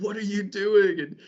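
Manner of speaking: mock screaming. Retelling how the dad's crew yelled up from the ground, retelling a scream. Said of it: "just start screaming at me like".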